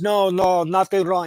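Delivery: put-on loud Russian-accented voice. Retelling a scene where a thug answers Denzel's question: Russian accent. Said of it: "in Russian accent".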